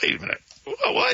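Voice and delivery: high-pitched, stunned, disbelieving reaction. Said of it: "It was like".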